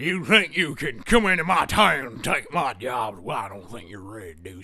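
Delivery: very low rough Western Texan voice. Acting a planned vulgar, gritty scene: low gritty Western Texan accent. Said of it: "lower register. Our accent will be a mm, Western Texan hick accent".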